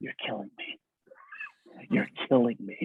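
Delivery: hushed, barely audible whispered aside. Retelling what an actor leaned in and said on set: imitating Tom speaking very quietly. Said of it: "he said to me very quietly".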